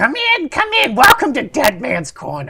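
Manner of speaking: put-on very high old woman voice. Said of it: "in a old womany voice".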